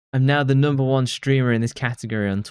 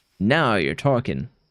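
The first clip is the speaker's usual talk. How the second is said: put-on farmer-style American accent; 2 semitones lower than usual. Voicing the character Kyle, replying to a partner, in a weird farmer American accent. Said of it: "this weird farmer American accent".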